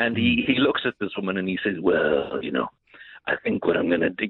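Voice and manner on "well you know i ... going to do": very low, dropped, raspy rasping voice. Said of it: "he had this raspy voice".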